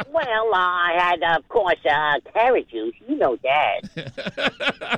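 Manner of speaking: cartoon rabbit voice with Brooklyn accent. Answering the host's question addressed to Bugs, in Bugs Bunny voice. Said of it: "What was for breakfast, Bugs?".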